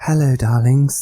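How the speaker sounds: exaggerated, loud, put-on woman's voice. Asked by the host to try a woman's voice, the speaker gives it a go. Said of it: "Just try and do a woman's voice".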